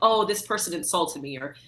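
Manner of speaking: usual speaking voice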